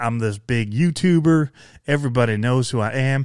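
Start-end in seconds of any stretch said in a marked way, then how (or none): none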